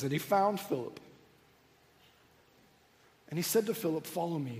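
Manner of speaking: words spoken through tears, crying. Reading a Bible verse aloud this morning, the speaker speaks while crying. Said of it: "I'm sorry, I'm just going to cry it up".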